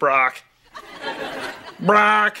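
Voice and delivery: high, squawking parrot bird call. Repeating someone's weird-sounding name the way a parrot would, parrot squawk. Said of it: "Sounds like a parrot".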